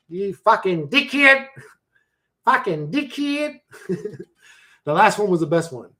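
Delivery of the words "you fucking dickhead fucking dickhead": put-on Australian accent, pitched higher. Asking if it sounds like a real Australian, the speaker tries an Australian accent. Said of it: "does it sound like a real Australian?".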